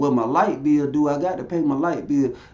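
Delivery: plain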